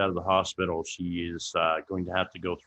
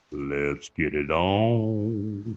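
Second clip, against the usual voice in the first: very slow, word on drawn out.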